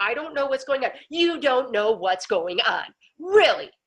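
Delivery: worked-up, upset man's voice, carrying loudly. Retelling a phone call on a bus with a clearly upset man: imitating an upset caller. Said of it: "And that's exactly how he sounded".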